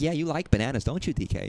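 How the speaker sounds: matter-of-fact delivery. Describing how she talks to DK, doing Pauline's matter-of-fact tone. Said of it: "but like so matter of fact".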